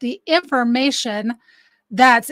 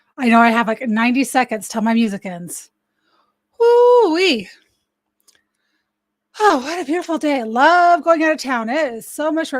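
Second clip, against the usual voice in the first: breathing hard, out of breath. Just after running up the stairs, greeting everyone, out of breath. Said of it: "Can you tell I was running up the stairs?".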